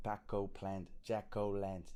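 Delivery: put-on American accent. Showing how a rhyme works by saying the words: american accent. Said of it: "I'm gonna have to do the American accent".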